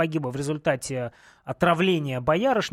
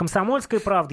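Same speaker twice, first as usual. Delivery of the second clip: ordinary talk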